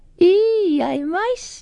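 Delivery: very high, taunting jeer with drawn-out eh. One classmate mocks another on the way into class: jeering. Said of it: "jeered [name]".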